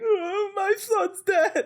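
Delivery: overdone sob, very high and very slow. Mocking an actor's crying scene: over-the-top crying as Lin-Manuel Miranda. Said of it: "he's crying and it's very over the top".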